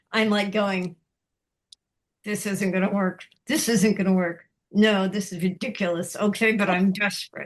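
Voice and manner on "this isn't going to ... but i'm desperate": mock muttering through gritted, clenched teeth. Retelling their own words in a stressful moment, retelling speech through gritted teeth. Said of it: "through gritted teeth".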